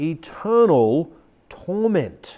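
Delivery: each word drawn out deliberately, slow and hushed. The speaker repeats a phrase for emphasis, said slowly. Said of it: "I say it slowly".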